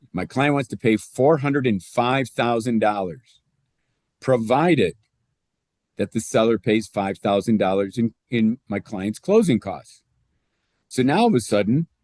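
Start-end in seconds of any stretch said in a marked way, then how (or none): none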